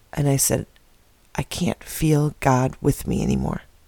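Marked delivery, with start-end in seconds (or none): 1.3-3.6 put-on choked-up, tearful voice. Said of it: "just got choked up".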